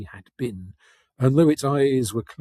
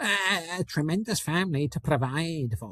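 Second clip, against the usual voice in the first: pitched-up grumbling mutter; 5 semitones higher, 6 dB quieter than usual. Narrator reading Scrooge's reply to the ghost, muttering. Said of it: "muttered Scrooge".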